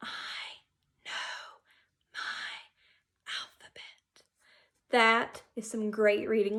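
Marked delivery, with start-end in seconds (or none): 0.0-4.2 very quiet, hushed whisper. Leading a group in rereading a sentence aloud: quiet voice. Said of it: "And let's read it in our quiet voice".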